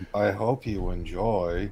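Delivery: put-on flat monotone voice. Welcoming viewers to the show, doing the Ben Stein thing: Ben Stein monotone voice. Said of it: "Do the Ben Stein thing".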